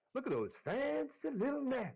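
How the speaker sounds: very high, sing-song, put-on American Southern accent. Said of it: "try to do a Southern accent".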